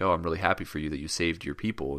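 ordinary delivery

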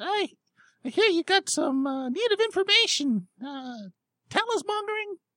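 very high, squeaky, shrill fairy voice. A storyteller voices a little fairy speaking: very high, squeaky voice. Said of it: "in a very high, squeaky voice".

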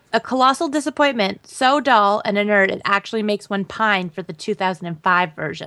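ordinary talk

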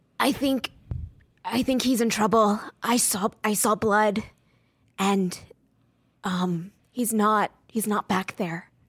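confiding, hushed, voiced stage whisper. Leaning in to tell another player a character is hurt: half-whispering in character. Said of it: "I whisper".

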